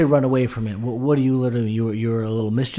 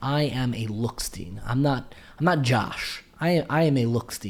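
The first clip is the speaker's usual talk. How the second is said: ordinary talk, nothing marked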